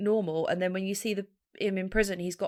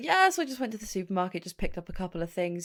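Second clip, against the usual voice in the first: mock casual, offhand delivery. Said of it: "I was like".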